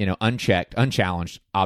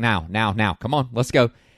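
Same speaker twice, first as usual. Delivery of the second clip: put-on calm urgency, not screaming; 2 semitones higher than usual. Imitating the movie character hurrying others along: imitating Jeff Goldblum, urgent but not yelling. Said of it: "He's just like".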